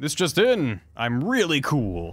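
put-on slow, old-style evening news anchor delivery. Playing an old newscaster on the evening news: old newscaster voice. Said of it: "sounds like a, like an old newscaster".

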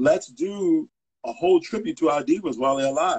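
plain

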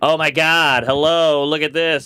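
slow, put-on Valley girl voice. Recalling how people at an Australian festival mocked Americans, in a Valley girl voice. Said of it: "that was our Valley girl voice".

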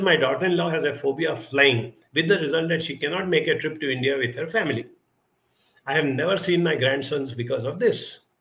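ordinary delivery

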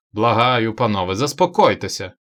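loud cried-out call. The presiding chairman breaks into the gentlemen's argument: crying out. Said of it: "скрикнув головуючий".

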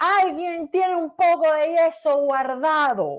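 slow, loud, drawn-out call carried at distance.

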